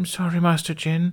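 deeply embarrassed, apologetic voice. Aeola apologizes to Master Jyn, mortified. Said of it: "retroactively mortified".

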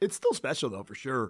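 emotional, breaking, cracking voice. Co-host on a wrestling podcast getting emotional, voice cracking. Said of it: "My voice cracked".

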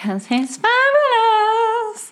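very high, slow, flamboyant, boastful sing-song.

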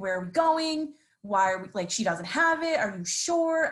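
loud calling-out yell. Retelling a dream of chasing someone uphill: imitating own yelling. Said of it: "I was yelling".

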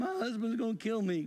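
mock tearful, weepy, high crying voice. Recounting what a woman said during an emergency, imitating someone crying. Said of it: "she's crying and going".

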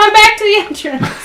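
shouting. Speaking in character, telling everyone to get back again: yelling. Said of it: "I just yell".

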